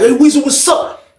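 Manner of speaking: very high pitch, hostile and aggressive tone. Telling how a man confronted him, retelling an aggressive greeting. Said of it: "He kind of came aggressive with it".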